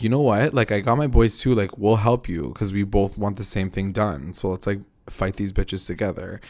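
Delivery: ordinary delivery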